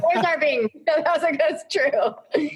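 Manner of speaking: high, laughing through the words.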